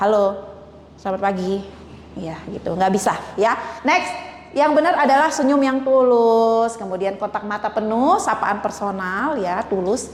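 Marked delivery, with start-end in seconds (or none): 0.0-1.6 flat, monotone, dutiful-sounding delivery. Demonstrating an unacceptable greeting said like a chore: flat, monotone greeting. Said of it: "sapaan monoton seperti tugas ini".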